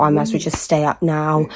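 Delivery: ordinary talk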